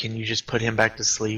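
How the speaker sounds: quiet, hushed half-whisper under the breath. Playing a character who asks a companion a quiet favour: half-whispering.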